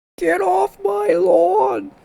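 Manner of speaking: very high, very loud terrible voice, screeching way up high. Listing a game hero's best voice lines, the speaker attempts a terrible Gyrocopter impression. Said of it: "that was a terrible impression".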